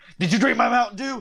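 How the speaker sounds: very high, loud, accusing Texan outburst. Picturing a figure bursting into a house: Alex Jones impression. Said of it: "I could see Alex Jones in his fucking Texan ass busting into somebody's house saying".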